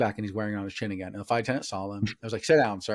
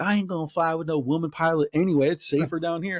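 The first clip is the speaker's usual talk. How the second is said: put-on man's yell, kept small, pitched up; 6 semitones higher than usual. Retelling a flight incident, speaker imitates a passenger yelling. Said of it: "you didn't hear him yelling".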